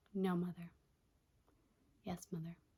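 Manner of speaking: soft, flat, emotionless deadpan monotone, no expression. Mother retelling her daughter getting into character, imitating emotionless Wednesday voice. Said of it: "doing this weird, like, voice and, like, no emotion type deal".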